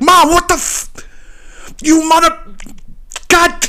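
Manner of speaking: put-on, very high, slow, cut-off, choked-back sputtering curses. Retelling a guy flipping out in his own restaurant: retelling sputtering stifled curses. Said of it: "he wanted to curse and he couldn't".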